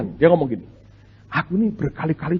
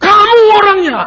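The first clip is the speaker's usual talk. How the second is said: very loud, high, thunderous booming shout; 10 dB louder than usual. Retelling how a conversation partner stood up and pointed mid-talk, booming shout. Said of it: "suaranya menggelegar".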